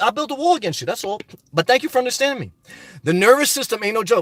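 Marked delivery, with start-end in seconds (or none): none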